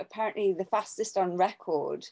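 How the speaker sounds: ordinary talk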